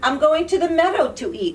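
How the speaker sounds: ordinary delivery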